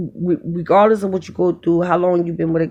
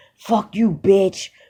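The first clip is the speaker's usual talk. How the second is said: put-on, sudden, hostile, angry outburst; 2 semitones higher than usual. Retelling what a man says once an argument starts: imitating a man yelling in an argument. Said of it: "as soon as they get in an argument with you".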